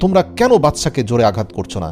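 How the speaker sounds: plain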